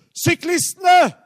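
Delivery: very high, loud, called-out yell.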